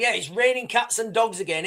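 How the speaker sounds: usual speaking voice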